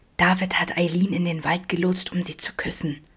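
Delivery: secretive, conspiratorial whisper. [name] shares a secret with Vincent, whispering. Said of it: "flüsterte".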